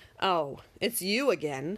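low, slow, snooty, haughty, superior drawl. Annoyed at someone shouting across the river again, answering in a low, snooty voice. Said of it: "Handsome said in a low, snooty voice".

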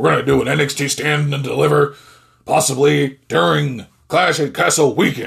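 put-on man's voice that strains the throat. Announcing an nxt show for clash at the castle weekend in a voice-hurting man impression. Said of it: "that makes my fucking voice hurt when I try to do a it's a man impression".

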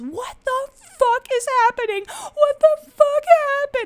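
mock piercing, very high, desperate scream of despair. Recounting a night on the couch, the speaker retells screaming up at the heavens. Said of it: "I was screaming on my couch".

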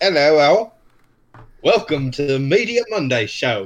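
British-sounding delivery. Restarting the show greeting to be a bit more British: put-on British accent. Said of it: "We can be a bit more British".

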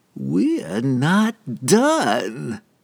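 high, lingering voice, stretched and drawn out. Narrator voicing the nightmare dentist as it moves closer: lingering nightmare voice. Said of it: "The nightmare's voice seemed to linger in the air longer than it should".

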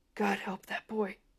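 hushed whisper under the breath. As the paramedics lift the boy onto the stretcher, he whispers. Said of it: "he whispers".

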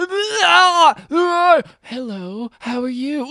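each "Ah" drawn out, high and very slow. Retelling a movie scene of switching characters, imitating James McAvoy. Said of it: "James McAvoy just going".

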